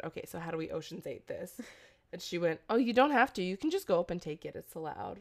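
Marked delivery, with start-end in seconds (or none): 0.0-1.5 soft, hushed half-whisper under the breath. Retelling what she half-whispered on walking into a fashion exhibit: retelling a half-whisper. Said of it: "I whispered to her".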